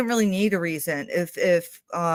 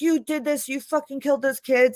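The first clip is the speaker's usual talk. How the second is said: put-on high-pitched screaming yell; 8 semitones higher than usual. Retelling a detective accusing a suspect in a fight: imitating someone screaming. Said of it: "he's screaming at him".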